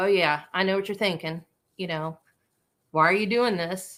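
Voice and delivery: mock sassy, sarcastic heroine character voice. Voicing the book's first-person narrator speaking to the reader: sassy character voice. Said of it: "she's a little sassy".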